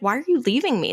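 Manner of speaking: put-on sweet, innocent, confused tone. Describing a scene where a character is being left, imitating sweet, innocent confusion. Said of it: "in a very sweet, innocent way".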